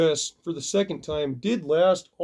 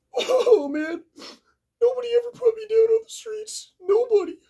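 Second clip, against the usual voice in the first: very high-pitched mock sobbing, crying wail; 3 dB louder than usual. Retelling what a beaten fighter said to the barber: imitating someone crying. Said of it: "he's crying to the barber".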